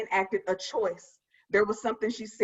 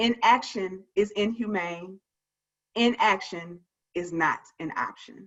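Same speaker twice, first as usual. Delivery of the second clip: usual speaking voice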